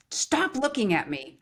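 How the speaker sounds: acted-out high, mild half-scream yell. Retelling what a father screamed at a five-year-old: imitating someone screaming. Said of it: "he screams at me again".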